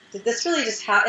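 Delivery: ordinary talk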